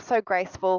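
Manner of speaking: normal talking voice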